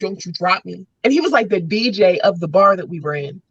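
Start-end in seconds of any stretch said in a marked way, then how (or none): 0.0-0.9 quiet, hushed stage whisper under the breath. Retelling being hoisted onto a DJ's lap, re-enacting half-whispering to him. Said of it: "I'm like whispering at him".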